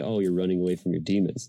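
ordinary talk

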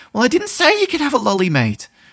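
irritated, upset, very high, loud and swooping. Showing how speaking to him while annoyed sounds, annoyed and upset. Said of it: "when I'm annoyed and upset".

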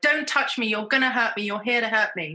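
put-on toddler voice, protesting. Retelling a toddler's words while pushing hospital staff away: imitating a toddler fighting people off. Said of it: "fighting and slapping and kicking and pushing all of these people away".

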